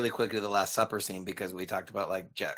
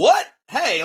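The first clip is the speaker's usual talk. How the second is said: put-on defensive tone, higher and louder; 12 dB louder than usual. Retelling a film scene where Peter is told he will deny Jesus: imitating Peter, defensive. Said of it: "getting all defensive and called out".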